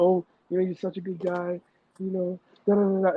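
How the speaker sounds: high, weepy, tearful crying voice. Retelling what she said to him while crying: imitating someone bawling. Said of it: "she's just bawling and crying".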